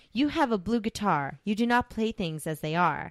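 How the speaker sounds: ordinary talk, nothing marked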